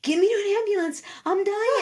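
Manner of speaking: acted, desperate, panicked screaming, very high-pitched. Recalling being sick at a concert, re-enacting her own screaming. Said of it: "I remember screaming like".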